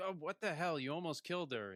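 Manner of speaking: acted, pissed-off angry outburst, pitched high. Retelling a book scene where someone almost got killed: imitating pissed-off Darrow. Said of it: "Darrow's pissed, and he's like".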